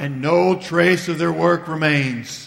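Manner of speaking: low, dry, deadpan delivery, acted. Quoting a lecturer who ended each story about missionaries the same way, in a dry voice. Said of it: "he has this kind of dry voice".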